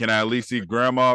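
ordinary talk, nothing marked

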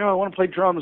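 acted, childlike, pleading, begging plea. Recalling how, as a child, they pleaded at school: retelling a plea. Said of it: "And I pleaded".

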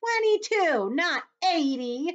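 shrill shriek, very high and very loud. Narrator reads the earthworm correcting the centipede's count, shrieking. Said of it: "shrieked the earthworm".

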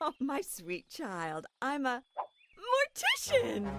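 perky, happy-sounding character voice. As Eleanor, Claudia's mother, answering what she does: perky Eleanor voice. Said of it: "but a very perky voice".

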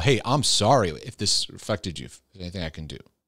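ordinary talk, nothing marked

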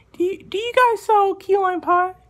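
high put-on voice. Repeating the question after the other person can barely hear, high-pitched put-on voice. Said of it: "my voice is a little bit high".

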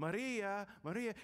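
acted loud calling out. Telling a story, acting out a man calling to a praying woman, retelling a raised-voice call. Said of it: "he raises his voice".

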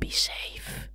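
soft, hushed, breathy whisper. Retelling what a weird old man said while holding his hand up, retelling a whisper. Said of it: "just whispers".

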